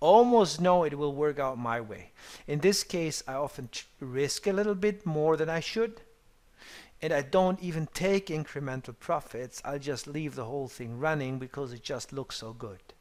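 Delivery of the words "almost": heavy, leaning stress on almost. Explaining his trading habits, emphasis on 'almost'. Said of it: "put emphasis on the word almost".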